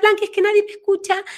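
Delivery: put-on small, high, fast childish voice.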